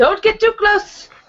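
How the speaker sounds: very high call. Voicing a character as the others jump away: calling after someone. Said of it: "gonna call after them as well".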